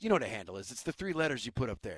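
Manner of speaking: mock totally earnest, dead serious, no joking. Retelling a movie villain's boast, imitating someone dead serious. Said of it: "he's being a million percent serious".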